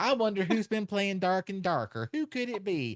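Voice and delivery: mock church lady voice, high and slyly teasing.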